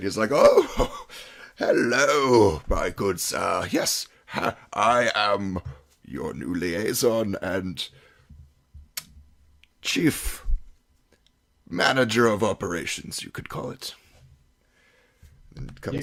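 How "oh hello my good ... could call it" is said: very slow, loud, grand, pompous upper-class drawl. Voicing a garishly dressed figure greeting the party with pomp: pompous well-to-do gentleman voice. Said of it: "clearly trying to look like a well-to-do human".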